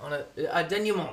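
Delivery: put-on French accent, quick.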